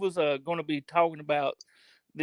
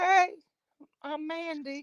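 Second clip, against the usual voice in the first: very high, girly put-on feminine voice; 11 semitones higher, 4 dB quieter than usual. Asked to hear the Mandy voice: imitating Mandy's female voice. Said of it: "if Mandy would use her fem- female voice".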